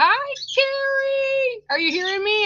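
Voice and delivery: very high, playful, teasing yell. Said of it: "I'm yelling through your crystals".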